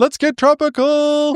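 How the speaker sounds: very high-pitched shouted yell. Repeating a catchphrase that is always yelled coming into town: yelling a catchphrase. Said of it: "he yells that".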